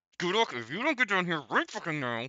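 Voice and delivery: through gritted teeth, frustrated. Voicing Faye calling Gudok down in frustration, through gritted teeth. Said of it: "gritting her teeth in frustration so much".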